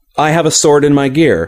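ordinary delivery

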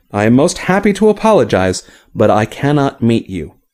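plain

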